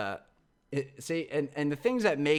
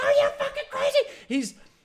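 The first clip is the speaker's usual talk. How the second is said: put-on very high, shrill, loud screaming outburst; 6 dB louder than usual. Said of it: "He's screaming".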